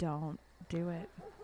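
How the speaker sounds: soft, quiet, slow, low-pitched voice.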